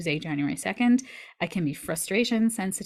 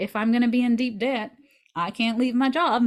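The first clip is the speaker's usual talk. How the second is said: put-on Southern US accent, raised and pitched up; 5 semitones higher, 5 dB louder than usual. Retelling a past thought about debt and leaving a job: Southern accent. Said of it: "I don't know why I had a Southern accent there".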